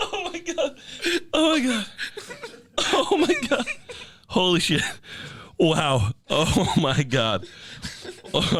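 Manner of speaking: laughing hard while talking. Reacting to a story about a kid's costume, laughing hard while talking. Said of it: "I haven't laughed that hard in a long time".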